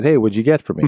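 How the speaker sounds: ordinary talk, nothing marked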